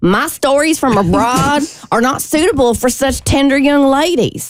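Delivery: put-on American accent with Southern country twang. Performing a line in an American accent with country Southern twang. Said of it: "I'm going to do an American accent, but I'm also going to do it with a little bit of a country southern twang".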